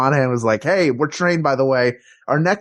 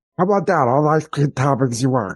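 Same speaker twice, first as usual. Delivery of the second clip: put-on voice of a very old man. Continuing the ice cream founder bit: Tom Carvel impression. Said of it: "It sounds like he's a thousand years old".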